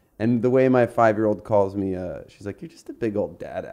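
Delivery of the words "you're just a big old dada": mock sweet condescension, lower, much quieter. A parent quoting how their five-year-old calls them, imitating sweet condescension. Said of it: "In like the sweetest condescending way".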